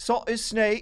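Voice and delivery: put-on Australian accent. Trying a line from the game: attempted Australian accent. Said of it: "can I do Australian?".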